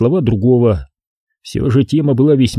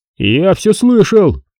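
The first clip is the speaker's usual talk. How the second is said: exclaiming, raised and pitched up; 7 semitones higher than usual. A man who overheard another's muttered remark, exclaiming. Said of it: "Толя воскликнул".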